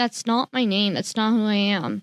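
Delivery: ordinary delivery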